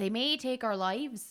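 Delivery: put-on Midwestern accent slipping into Scottish. Trying the quote in a Midwestern accent.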